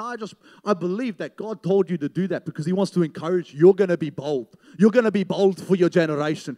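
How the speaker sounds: put-on loud South African accent. Retelling how a man prophesied over the speaker's life, in a big South African accent. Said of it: "big South African accent".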